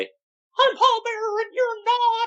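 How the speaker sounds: very high, squeaky put-on voice. Doing an impression of Paul Bearer: Paul Bearer impression. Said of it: "I gotta do my".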